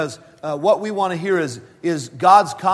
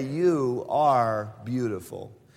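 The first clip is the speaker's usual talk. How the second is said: low, halting, stammering mumble; 5 semitones lower, 7 dB quieter than usual. Retelling a husband waking beside his wife, imitating a muttering, stammering man. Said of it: "in kind of a muttering, stammering way".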